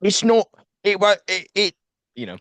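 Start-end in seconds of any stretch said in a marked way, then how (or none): 0.0-1.5 very high, slow, funny put-on British accent. Retelling what a British man said, imitating a British accent. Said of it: "of course he's British, so he's like this".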